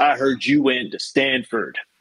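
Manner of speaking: heavy, thick Tennessee accent, badly done and butchered. Retelling what a skinhead said on walking up to him, butchered thick Tennessee accent. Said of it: "he's got this thick, thick Tennessee accent, which I just butcher".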